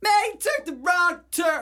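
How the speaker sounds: bad comic voice, very high, shrill and loud. Imagining a GPS voiced by Chris Rock: Chris Rock impression. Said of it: "Is that what Chris Rock sounds like?".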